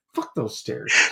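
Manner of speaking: mock muttering under breath. Retelling a muttered reaction to the cabin stairs: imitating a mutter under the breath. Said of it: "I just muttered under my breath".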